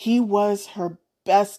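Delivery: plain reading voice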